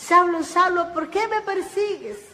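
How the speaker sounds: loud, high voice calling out.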